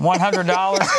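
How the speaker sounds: ordinary delivery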